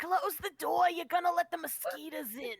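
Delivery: put-on high-pitched old crone voice. Speaker voicing the hag players meet in a woodland cottage: old hag voice. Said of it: "she's like".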